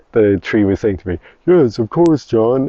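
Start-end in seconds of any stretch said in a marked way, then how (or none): 1.5-2.7 really cartoonish put-on voice, high and slow. Voicing a tree answering the speaker's request, in a cartoon voice. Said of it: "in like a really cartoon voice".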